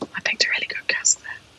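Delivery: hushed whisper, barely voiced, very quiet. Claiming credit for picking a really good cask, whispered. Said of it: "I have to whisper that bit".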